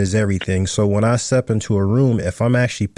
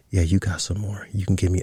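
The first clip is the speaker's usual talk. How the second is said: put-on whisper, quieter; 3 semitones lower, 5 dB quieter than usual. Retelling what a woman whispered in the speaker's ear: imitating a whisper. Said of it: "she's whispering in my ear".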